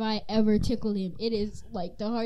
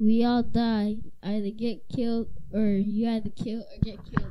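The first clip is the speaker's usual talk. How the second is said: put-on very dull deadpan, low, bored monotone. Retelling a line from a funny Vine video, in a monotone, low, boring voice. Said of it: "very monotone and low and boring".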